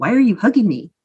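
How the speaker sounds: plain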